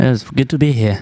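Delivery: put-on Swedish accent. Guest [name] greeting the front side crew, fake Swedish accent. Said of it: "you're getting better at that accent".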